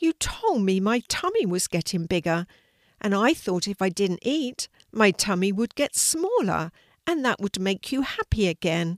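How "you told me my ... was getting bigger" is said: plain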